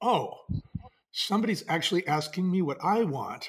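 usual speaking voice

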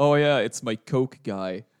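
mock-cool, nonchalant voice. Speaker quotes a man's answer to a warning about his door: imitating a very cool reply. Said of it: "En toen zei [name] heel cool".

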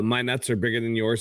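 ordinary delivery

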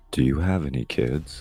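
hushed whisper. In a game scene, leaning in to a man's ear with a spear, whispering. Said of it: "go up to his ear and whisper".

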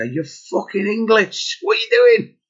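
acted-out shouting. Dad retelling shouting upstairs at his kids, retelling a shout upstairs. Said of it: "I had to shout upstairs and go".

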